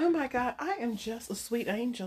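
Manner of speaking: southern belle debutante accent. Joining in another speaker's southern belle bit, southern belle voice. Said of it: "You're a debutante from Dirty South".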